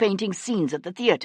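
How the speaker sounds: ordinary delivery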